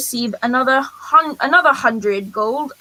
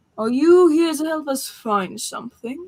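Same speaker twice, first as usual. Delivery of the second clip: said in a low tone; 2 semitones higher than usual. Voicing an elf noble hailing the group in the rain: speaking in a low tone. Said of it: "speaks in a low tone".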